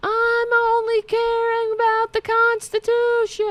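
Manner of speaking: very high-pitched yell. Mocking a pictured politician screaming outside: imitating Marjorie Taylor Greene yelling. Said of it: "Is that what you're yelling?".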